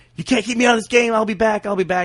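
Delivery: all-out high, defiant screaming. Retelling what a player screamed after being hurt in a game, retelling a scream. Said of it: "he's screaming".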